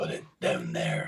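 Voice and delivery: deep, resonant, creaky character voice. Answering whether the voice comes naturally, showing it: resonant character voice. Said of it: "that sort of resonance".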